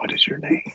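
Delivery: breathy, barely voiced, soft hushed whisper. Leaning down to the ship as a character and asking it: whispering. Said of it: "whispers to the ship".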